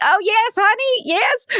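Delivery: very high, slow, put-on grandma voice. Retelling a guy who talks as a grandma while hacking someone's computer: put-on grandma voice. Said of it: "he's talking as if he's a grandma".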